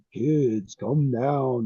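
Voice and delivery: creepy announcer voice, deep, low and slow. Show how the announcer calls to kids, in a creepy Tommy Lee Wallace ad voice. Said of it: "He has a creepy".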